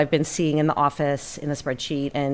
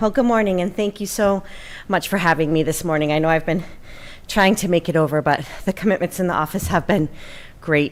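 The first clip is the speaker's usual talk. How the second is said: a little winded, slightly short of breath; 3 semitones higher than usual. Greeting a meeting after climbing two sets of stairs, a little winded. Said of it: "I'm a little winded from two sets of stairs".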